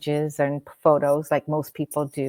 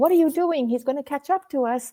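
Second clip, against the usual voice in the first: play-acted very high, frantic-paced, rushed screaming; 11 semitones higher than usual. Retelling screaming at the driver who stopped the car, retelling own screaming. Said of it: "as I'm like screaming".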